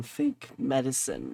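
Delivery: slow, voice cracking and breaking mid-sentence. Speaker discusses a man caught distributing fake medicine, voice cracking. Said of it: "My voice just cracked".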